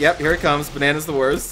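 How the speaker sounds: ordinary delivery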